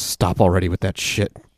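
put-on, mock vicious growl. Retelling the reply to a man offering to read something in Latin: mock vicious growl. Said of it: "with a vicious growl".

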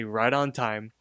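normal talking voice

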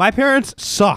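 mock angry child voice. Retelling how they complained as kids about their parents: imitating a pissed-off kid. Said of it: "we would get pissed and be like".

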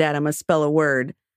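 plain

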